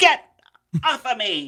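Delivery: high, loud, slow, drawn-out yell. Retelling a horror scene, imitating Jennifer Love Hewitt yelling. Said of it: "the Jennifer Love Hewitt".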